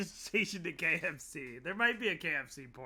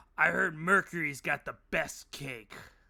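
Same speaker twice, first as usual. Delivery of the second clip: loud stage whisper that isn't quiet; 5 dB louder than usual. Game narrator voicing a character leaning over to a player, in a loud whisper. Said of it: "whispers, but he's very loud".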